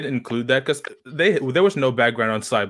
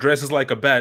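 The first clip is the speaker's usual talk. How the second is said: plain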